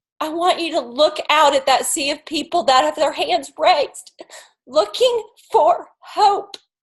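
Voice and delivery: moved, earnest, heartfelt and emotional delivery. Speaker urges listeners to look at people reaching out for hope, emotional. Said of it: "I'm sorry I'm emotional".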